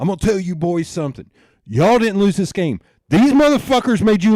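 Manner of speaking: angry yelling. Retelling how Dad yelled at the boys after a lost game: imitating Dad screaming. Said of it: "screaming at those guys".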